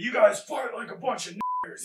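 very high-pitched, shrill, swooping scream. Recalling being kicked by several men, the speaker is retelling a scream. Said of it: "I started screaming".

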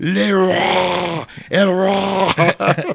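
put-on slow roar, Spanish accent. Imitating a Hulk toy that speaks Spanish: Spanish-accented Hulk roar. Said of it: "With an accent".

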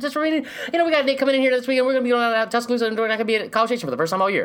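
very high-pitched, nonstop rapid rattled-off patter. Imitating a coach who talks real fast: imitating Jimbo Fisher talking fast. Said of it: "talking real fast all the time".

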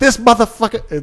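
put-on very high, loud, straight-up South Side accent. Retelling what a woman said on stage before judges: South Side accent. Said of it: "she talked like she was straight up from the South Side".

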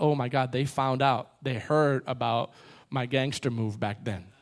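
low, hushed, panicked delivery.

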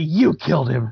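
fake youthful heroic voice. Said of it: "you did the impression really well".

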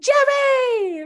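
very high, stretched-out, drawn-out shout. Recounting a show scene where a woman spots a flying man, retelling a scream. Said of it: "And she just screams".

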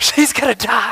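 high, loud, breathy, freaked-out panicked voice.

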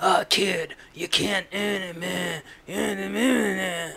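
very slow, every word chewed and dragged out. Imitating an actor's line from a movie: weird Alec Baldwin-y voice. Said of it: "he's doing a weird Alec Baldwin-y voice".

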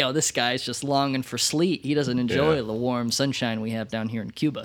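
ordinary talk, nothing marked

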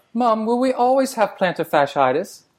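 high-pitched mock British accent.

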